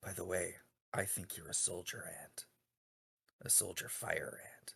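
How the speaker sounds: soft, confiding whisper. Voicing a character leaning in to another's ear: whispering in character. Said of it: "he whispers into Atlas's ear".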